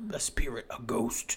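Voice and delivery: hushed, whispered movie-trailer announcer voice. Riffing on a film title after another speaker recalls the trailer narrator, movie trailer voice guy. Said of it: "I hear the trailer voice guy from all the trailers".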